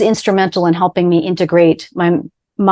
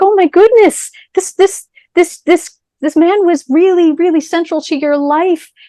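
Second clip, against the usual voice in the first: play-acted shocked, appalled, aghast, horrified tone; 11 semitones higher than usual. Retelling own reply to a grieving young woman: retelling own horrified reaction. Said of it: "I was horrified. I was like".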